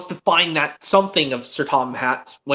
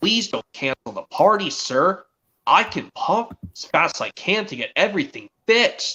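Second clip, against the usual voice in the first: ordinary talk, nothing marked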